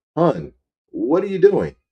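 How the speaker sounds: snide, sarcastic, acted-out, swooping, high voice. Retelling what a man in an ad says when he pulls up: imitating a sarcastic question. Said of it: "sarcastically says".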